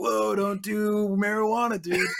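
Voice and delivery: high-pitched, very slow, dragged-out drawl. Retelling an anti-drug PSA: Michelangelo impression. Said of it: "and he'd be like".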